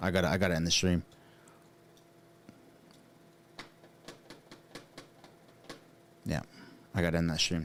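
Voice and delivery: choked-up voice cracking and breaking with emotion. Ending a stream and thanking viewers for support: choked up. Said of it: "I'm getting choked up".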